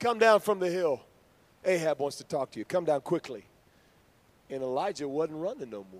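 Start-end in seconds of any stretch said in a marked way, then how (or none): 0.0-3.4 put-on sarcasm, higher and louder. Retelling the captain's order to Elijah, retelling a sarcastic order.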